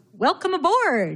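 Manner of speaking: bright, upbeat dad voice. Retelling how a bandmate's dad greeted the new bass player, imitating a cheery dad voice. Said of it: "in this cheery dad voice".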